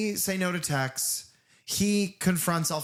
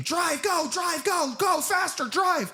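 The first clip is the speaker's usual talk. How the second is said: mock, very high, stretched-out scream. Retelling a movie scene where a character yells at the driver: imitating someone screaming. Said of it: "He's screaming".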